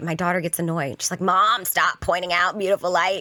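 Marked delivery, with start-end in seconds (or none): none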